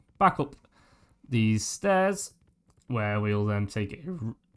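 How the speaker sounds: voice breaking and cracking mid-phrase. Narrating the route back up the stairs, voice cracking. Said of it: "Oh god, voice break".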